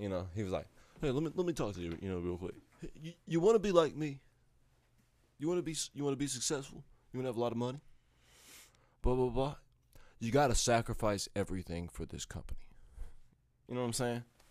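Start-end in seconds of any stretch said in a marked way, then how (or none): 1.0-12.6 talking like a total jerk, obnoxious. Speaker imitating a man from the company who talked like a jerk. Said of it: "He kind of talked like a dick".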